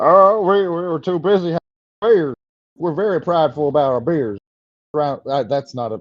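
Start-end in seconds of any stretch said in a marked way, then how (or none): 0.0-4.4 put-on Texas accent, laid on, pitched high. Trying to imitate Wisconsin people, slipping into a Texas-sounding accent. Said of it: "That's more of a Texas accent".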